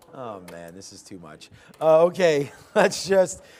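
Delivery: breaking up laughing. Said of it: "I don't know why I'm laughing".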